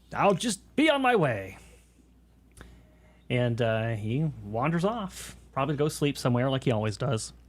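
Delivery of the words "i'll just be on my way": curt, snippy, dismissive tone, pitched up. Voicing a farmhand apologizing after an accident: snippy. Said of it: "being kind of snippy".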